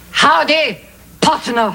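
put-on Texan cowboy accent. Trying out a practiced accent just in case of emergency: put-on Texas accent. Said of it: "I've been practicing my Texas accent".

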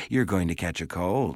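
ordinary delivery

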